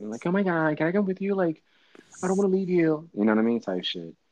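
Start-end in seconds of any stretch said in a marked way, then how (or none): 0.3-3.1 put-on squeaky, very high-pitched little boy voice.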